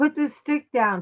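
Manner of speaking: light, high, mild half-yell. Retelling a story about a man yelling at a woman holding a stick; retelling a yell. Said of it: "And then he's yelling".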